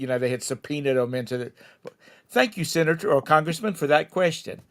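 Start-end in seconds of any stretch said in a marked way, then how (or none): 2.3-4.5 courteous, polite, formal delivery. Imitating someone questioned by a House committee, polite witness voice. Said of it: "a House committee was questioning".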